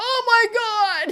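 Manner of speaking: very high, loud, pained wail, long drawn-out "my". Retelling lying there cramping during a painful procedure: imitating her own cry of pain. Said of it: "as I'm laying there going".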